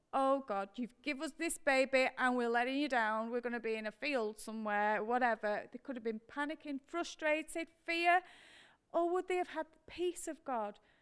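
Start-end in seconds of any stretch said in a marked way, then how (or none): none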